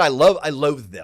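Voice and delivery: full-volume, really loud, booming outburst. Retelling own reply about solar panels, got really loud. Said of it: "Oh, I got really loud there".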